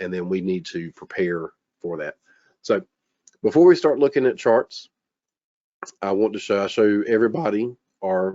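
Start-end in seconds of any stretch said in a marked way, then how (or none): 6.0-8.3 voice cracking and breaking. Presenter about to show charts to everybody, voice cracking. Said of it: "cracking the voice there".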